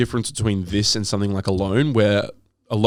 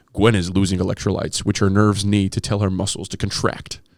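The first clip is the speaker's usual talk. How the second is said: put-on documentary narrator voiceover voice; 2 semitones lower than usual. Speaker mocking a show's narrator who over-explains: imitating a documentary narrator. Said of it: "do- doctor voiceover".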